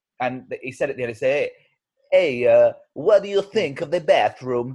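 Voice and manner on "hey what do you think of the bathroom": very bad, fake put-on Spanish accent. Quoting a man from Barcelona who fitted the bathroom, in the worst Spanish accent ever. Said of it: "That's the worst Spanish accent ever".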